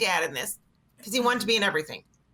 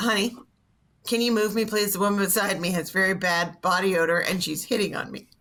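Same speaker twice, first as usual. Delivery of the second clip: plain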